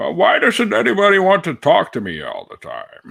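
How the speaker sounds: rough, very high, swooping, sing-song cartoon voice. Showing the voice found while talking: Harley Quinn cartoon Bane voice. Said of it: "the Bane voice".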